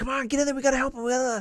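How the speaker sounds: play-acted, very high, shrill screaming. Recounting an incident, quoting the officer at the scene, imitating an officer screaming. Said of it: "the officer who was there screaming".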